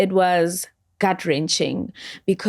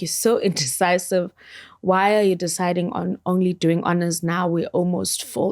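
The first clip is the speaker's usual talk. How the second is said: usual speaking voice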